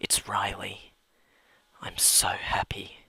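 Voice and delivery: soft, hushed, awed, creepy whisper.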